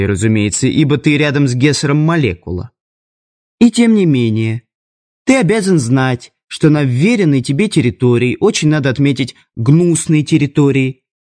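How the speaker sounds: ordinary delivery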